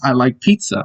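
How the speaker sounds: plain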